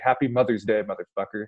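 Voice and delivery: put-on whisper. Retelling a line whispered to a player at the free throw line: imitating a whisper. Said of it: "whispers in his ear".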